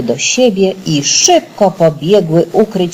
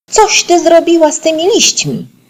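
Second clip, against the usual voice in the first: very high, shrill, very upset yelling; 13 semitones higher than usual. Narrating a story, voicing a character's line: shouting, very upset. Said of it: "Krzyczała już bardzo zdenerwowana Pyza".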